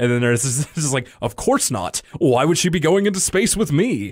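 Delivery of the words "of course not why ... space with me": put-on swooping cartoon-boy voice. Speaker recounts a cartoon scene, answering the captain, Arthur voice. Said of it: "I love doing that Arthur voice".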